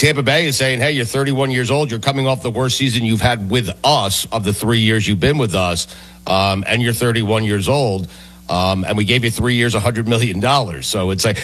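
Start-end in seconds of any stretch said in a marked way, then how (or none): none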